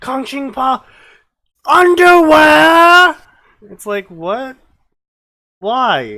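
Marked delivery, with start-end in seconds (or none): 0.0-3.2 put-on screaming, higher pitch and louder. Mocking spell names that mix in english words: imitating someone screaming. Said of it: "Why are you just screaming underwear".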